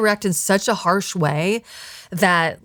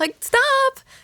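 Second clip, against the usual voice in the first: put-on high, giggling, girly, coy dismissive tone. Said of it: "You're supposed to just be like".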